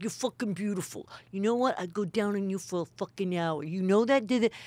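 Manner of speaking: put-on strong New York accent, street talk. Retelling what a comedian used to say to her: imitating Joey Diaz, New York accent. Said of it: "Joey Diaz would come up with a cigarette in his New York and he'd be like".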